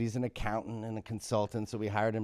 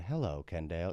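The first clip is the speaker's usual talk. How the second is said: low, mechanical robot voice; 4 semitones lower, 4 dB quieter than usual. Retelling being swapped for a humanoid, talking like a robot. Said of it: "I'm trying to talk like a robot".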